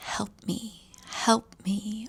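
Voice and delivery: very slow, drawn-out, hushed whisper. Retelling a ghost story, imitating the girl's plea: imitating a whisper. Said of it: "hear her whispering".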